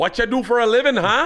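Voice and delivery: bad, fake Canadian accent, very high pitch. Showing off impressions, put-on canadian accent. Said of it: "if that's his Canadian accent".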